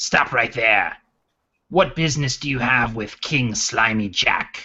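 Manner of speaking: throaty, guttural goblin voice. A game master voices the goblins guarding the fortification door, guttural goblin voice. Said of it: "speak out in their guttural voices".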